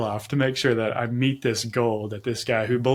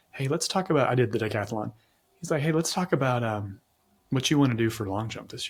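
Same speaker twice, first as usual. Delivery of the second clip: mock gentle, empathic voice, faster; 4 dB quieter than usual. Retelling how a champion athlete talked to him about long jump, imitating a kind, empathic voice. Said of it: "talk to you in this kind, empathic voice".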